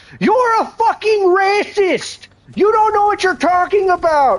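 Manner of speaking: play-acted very high, shrill, ranting, accusing screaming. Act out how he answered you when you raised the money aspect, imitating someone screaming. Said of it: "he just starts screaming bullshit the whole time".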